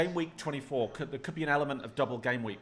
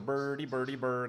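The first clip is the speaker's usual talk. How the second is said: put-on mock-Swedish accented chef voice. Describing a Muppet to the other speaker: Swedish Chef voice. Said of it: "all he used to go was go".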